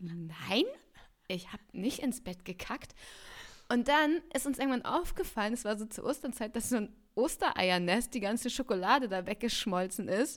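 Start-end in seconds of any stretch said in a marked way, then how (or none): 0.0-2.9 aghast, thoroughly appalled, low and soft. Retelling their own past answer to his question in bed, retelling being utterly horrified. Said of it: "völlig entsetzt".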